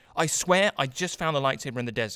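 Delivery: ordinary talk, nothing marked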